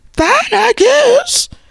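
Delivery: very high-pitched voice. Recapping a show, mocking how Tisha answered Nell, imitating Tisha's high voice. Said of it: "That high voice".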